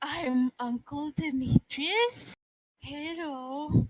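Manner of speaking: put-on cooing baby talk. Voicing a character who sees the babies and talks to them: baby talk. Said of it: "a baby talking".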